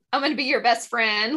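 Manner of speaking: ordinary talk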